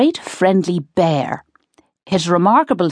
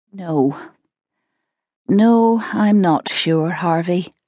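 feeble, weak voice, very slow and drawn out. Sitting down in a sweat amid packed cases, the narrator answers a companion weakly. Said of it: "I said weakly".

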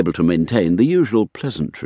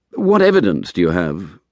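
plain reading voice

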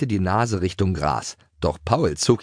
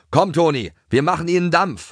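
very high, roaring, bellowing shout; 10 semitones higher, 4 dB louder than usual. Narrator reads Schoko calling back to Toni during a gallop, bellowing. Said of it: "brüllte Schoko nach hinten".

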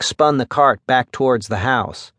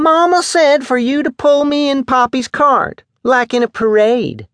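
prissy, shrill, very high-pitched screech; 13 semitones higher, 5 dB louder than usual. She calls back to Mac over the roar of the motor, screaming. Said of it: "she screamed".

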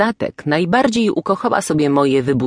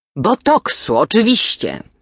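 pretentious, affected tone with put-on refinement; 3 semitones higher than usual. Aunt Matylda, corrected by a cousin, repeats the word in a pretentious tone. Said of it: "powracając do swojego pretensjonalnego tonu".

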